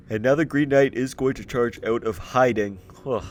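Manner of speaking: speaking through a yawn. Describing the Green Knight charging out of hiding, speaking while yawning. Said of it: "apologize for the yawning".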